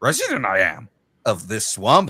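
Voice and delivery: little swamp-creature voice with swooping pitch. Acting out a skit where a character meets Yoda: Yoda voice. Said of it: "an original character of mine meeting Yoda".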